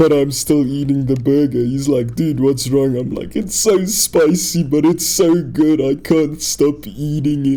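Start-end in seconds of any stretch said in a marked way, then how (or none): 3.4-7.6 crying, words broken by sobs. Retelling eating a burger, the speaker quotes their answer to him: imitating sobbing while talking. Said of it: "I'm full on crying now".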